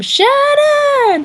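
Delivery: high, shrieked scream. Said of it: "like, scream".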